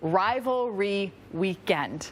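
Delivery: very slow, every syllable stretched and drawn out. Speaker shows how they always say a tricky phrase, very slow delivery. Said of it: "I say that really slowly".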